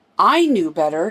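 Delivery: plain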